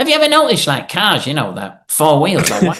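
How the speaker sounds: animated, swooping, up-and-down sing-song voice. Retelling how Mark Herbert talks, doing an impression: imitating Mark Herbert. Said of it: "I just used to do an impression of poor old Mark Herbert".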